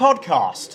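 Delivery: heavy stress landing on the word podcast. Saying the show's name again for listeners: stress on podcast. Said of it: "I quite like a bit of emphasis on the back".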